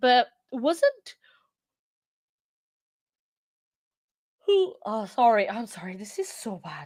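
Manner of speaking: talking through yawns. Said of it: "I don't know why I'm yawning so much".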